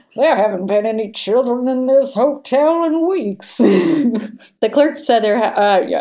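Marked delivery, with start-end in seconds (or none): 0.2-3.6 put-on old prospector voice, higher and louder. Retelling what the hotel desk clerk said, in an old prospector voice. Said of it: "they said it in an old prospector voice".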